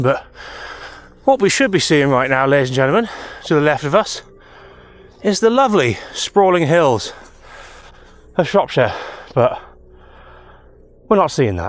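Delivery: huffing and puffing, out of breath. Walking up into the hills and describing the missing view: huffing and puffing. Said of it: "Please excuse my huffing and puffing".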